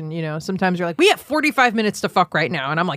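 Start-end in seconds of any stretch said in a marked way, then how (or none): none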